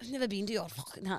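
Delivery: imitated Scottish accent. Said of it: "going back to German a bit".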